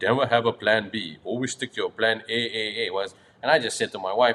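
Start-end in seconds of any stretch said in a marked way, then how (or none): 0.0-2.9 put-on Austrian accent. Retelling a visitor's words about never having a plan B: deep Austrian accent, imitating Arnold Schwarzenegger. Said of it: "he said in that deep Austrian accent".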